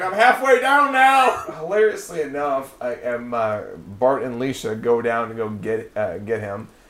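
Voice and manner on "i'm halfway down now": high, slow, drawn-out mocking whine. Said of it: "he's like".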